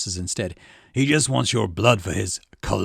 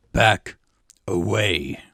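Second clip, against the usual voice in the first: icy cold voice. Reading a scene, a commander orders a man back: voice cold as ice. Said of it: "voice as cold as ice".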